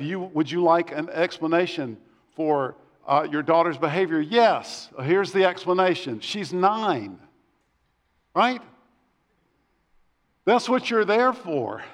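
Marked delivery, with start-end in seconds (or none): none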